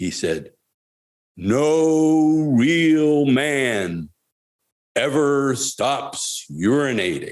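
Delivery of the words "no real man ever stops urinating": theatrical booming, very slow, drawn way out. Retelling a teacher's memorable line about restrooms: imitating a booming voice. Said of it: "he looked out with a booming voice".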